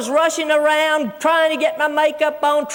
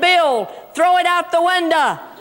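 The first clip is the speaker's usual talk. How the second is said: ordinary delivery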